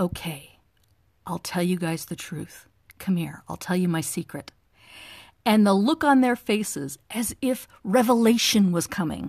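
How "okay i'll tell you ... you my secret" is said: quiet, hushed, confiding voice. Asked why they weren't married, the speaker retells answering the group really quietly. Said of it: "I got really quiet".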